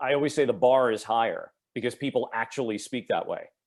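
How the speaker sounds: plain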